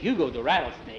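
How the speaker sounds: plain reading voice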